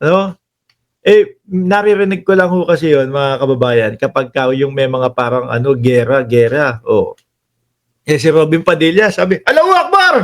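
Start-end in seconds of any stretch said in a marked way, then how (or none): 9.4-10.1 abrupt, very high-pitched sudden cry. Telling fellow citizens what Robin Padilla suddenly shouted, imitating Robin Padilla shouting. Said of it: "bigla sumigaw".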